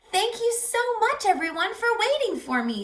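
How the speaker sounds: very high, squawky little bird creature voice. Narrating a story, voicing the creature as the box opens: squawky creature voice. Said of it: "said the creature with a squawk".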